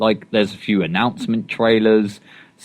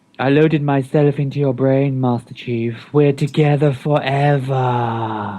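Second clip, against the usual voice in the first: seductive, creepy put-on voice, very drawn out; 4 semitones higher than usual. Retelling a game plot, the speaker voices the female character: put-on sexy, creepy voice. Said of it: "the most sexy and creepy voice you've ever put on".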